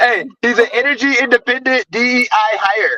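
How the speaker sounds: mocking, high-pitched shout.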